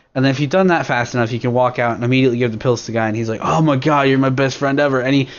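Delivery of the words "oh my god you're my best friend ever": surfer-bro way of talking. Retelling what a guy says when you hand him pills; surfer dude voice. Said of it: "he talks like a surfer dude".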